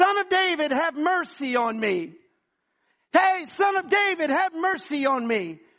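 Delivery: put-on loud pleading. Retelling how a blind man called out to Jesus: retelling a belligerent shout. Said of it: "begins to be extremely belligerent".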